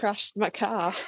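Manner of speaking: very quiet hushed voice. Retelling what the car's owner said after it hit a snowbank, very quietly. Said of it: "Dean goes very quietly".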